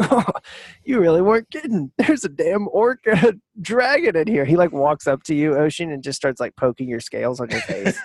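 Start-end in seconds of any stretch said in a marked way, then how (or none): 0.0-4.4 high-pitched speech broken up by laughter. Game master voicing a character meeting the players in a barn, laughing while talking. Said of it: "he just starts laughing. He's like".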